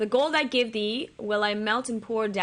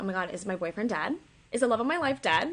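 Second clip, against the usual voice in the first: fretful, worried outburst with rising panic. Retelling a scene as the nervous queen: imitating anxious panic. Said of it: "She's, like, anxious".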